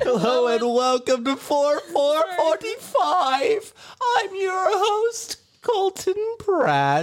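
very high cartoon character voice. Opening the recording as host, VeggieTales character voice. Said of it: "you sound like a VeggieTales character".

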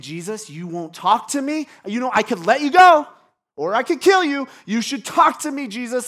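rattled, very loud, rising freaked-out outburst. Retelling Pilate's threats to a silent Jesus: imitating freaked-out Pilate. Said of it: "he's getting freaked out".

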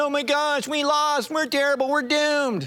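mock tearful, defeated, high crying lament. Retelling Joshua's lament after a loss, imitating Joshua crying. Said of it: "Remember Joshua's crying".

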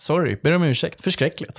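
lightly tossed off. Repeating an apology just heard: imitating Mona Sahlin's nonchalant apology. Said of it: "det låter så extremt nonchalant".

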